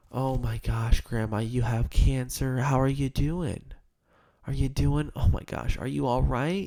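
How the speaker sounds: soft, hushed, worried, concerned voice. Demonstrating a response to a grandma's cancer news, concerned and almost half-whispering. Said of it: "So that's me acting concerned".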